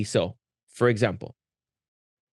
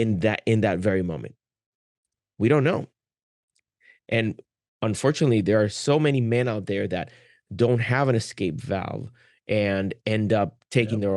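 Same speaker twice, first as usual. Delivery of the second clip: ordinary talk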